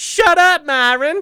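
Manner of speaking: shrill, high, loud squealed snap. Retelling how his wife imitates the actor: Leslie Jordan impression. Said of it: "does a perfect impression of him saying".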